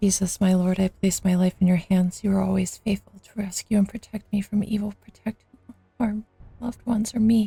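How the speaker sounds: very quiet whispering. Character praying over and over while everyone listens, whispered prayer. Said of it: "she's just whispering this prayer".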